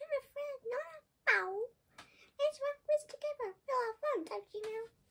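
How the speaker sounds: tiny, very high, reassuring mouse-like peep. Narrator reading a mouse character answering a frightened lion, peeping. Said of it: "Mouse peeped".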